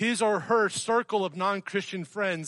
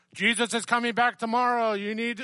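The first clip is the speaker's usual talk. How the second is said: mock megaphone yell, higher pitched; 4 semitones higher than usual. Imitating a person on a street corner with a megaphone: imitating a street preacher yelling. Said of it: "standing on the street corner yelling through the megaphone".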